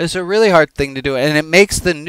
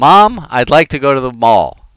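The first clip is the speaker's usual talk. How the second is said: put-on childlike, kid-like voice; 4 dB louder than usual. Acting out a scene between a child and Mom: acting out a child asking. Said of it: "let me do it like I'm acting it out".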